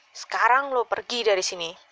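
sharp, cutting voice. The narrator confronts a young man, sharply. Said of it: "gue berkata dengan tajam".

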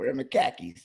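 very loud, thick, put-on Boston accent. Trying out a Boston accent after being coached on it. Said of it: "am I in the streets of Boston right now?".

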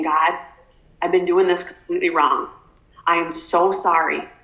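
acted tearful voice, near crying. Recounting a life-changing moment, retelling a tearful apology. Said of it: "just like tearing up and just saying".

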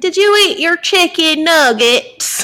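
put-on thick southern drawl, very high small child voice. Do the little kid you follow, Jack voice, little kid with real deep southern accent. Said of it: "that little kid with a real deep southern accent".

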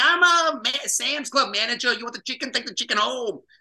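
put-on New Jersey accent. Recalling an awesome former Sam's Club manager, doing Diana's New Jersey accent. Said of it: "she talked like this here".

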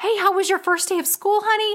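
excited, eager, high-pitched motherly voice. Retelling a mother greeting her kindergartner after school: imitating an excited mom. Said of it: "His mom was so excited to talk to him".

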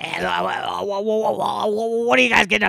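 creaky stop-start stammer. Imitating a woman who makes noises instead of words: imitating a woman's halting noises. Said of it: "She makes a lot of noises".

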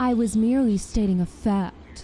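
teasing, mocking, snarky princess voice. In a game scene, one character mocks another, mocking impression of companion. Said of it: "Is that your impression of me?".

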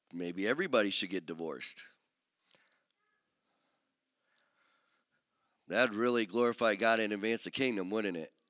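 sarcastic delivery, dripping with irony. Preaching on a scripture passage to listeners, sarcastic. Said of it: "That's sarcasm".

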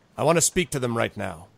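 plain

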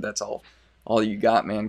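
sarcastic tone. Retelling own earlier remark to Kevin: retelling own sarcastic remark. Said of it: "I was being super sarcastic when I said".

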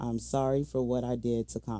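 plain

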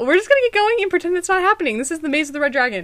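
rushed, fast, rattled-off announcer-style patter. Starting a Halloween maze recording, talking very fast. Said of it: "I'm talking so fast".

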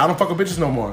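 ordinary talk

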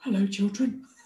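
lovely, gentle bedtime-story narrator voice. Showing how she wanted to read her children's book: Tom Hardy bedtime story voice. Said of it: "Tom Hardy when he did, um, the, like, bedtime story".

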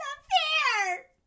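piercing, shrill, high yell at full volume. Recapping a story, acting out the heroine's outburst; retelling a yell. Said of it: "And she yells".

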